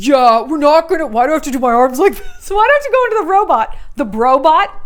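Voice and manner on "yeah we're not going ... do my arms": put-on dude bro voice. Asked about a celebrity's view of his mustache, answering in a dude bro voice. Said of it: "let me do my bro voice".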